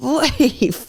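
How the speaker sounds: play-acted high screaming. Retelling how a giant man ran over screaming at someone. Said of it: "he's literally screaming at him".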